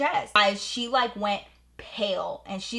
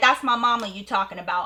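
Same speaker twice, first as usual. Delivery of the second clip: ordinary talk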